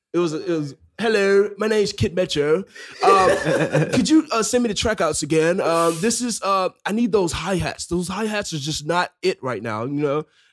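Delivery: put-on British accent. Speaker retelling a phone call from a guy from England, imitating Kid Metro's fake British accent. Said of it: "He was just talking like that".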